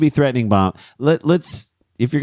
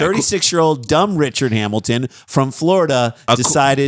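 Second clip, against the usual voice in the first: ordinary delivery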